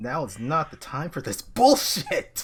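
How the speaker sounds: hysterical shouting. Speaking in character to guards: hysterical shouting. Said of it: "You're being a bit hysterical here".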